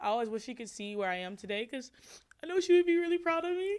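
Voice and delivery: crying while talking. Talking about a mom who died, crying while talking. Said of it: "I'm crying right now".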